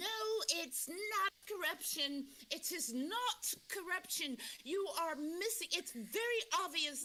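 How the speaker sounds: insistent, emphatic. Retelling someone's denial of corruption: imitating someone adamantly denying. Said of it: "so adamantly saying".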